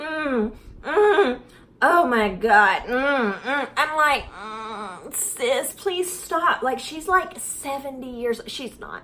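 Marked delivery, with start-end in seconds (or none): 0.0-3.7 imitated eating moans, slower. Complaining about the sounds she makes eating, imitating her moaning while eating. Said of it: "when she eats food, it sounds like borderline inappropriate".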